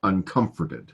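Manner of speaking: uncomforted stressed on second syllable com. Going through poetry words, saying uncomforted with stress on com. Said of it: "The emphasis is on the second syllable".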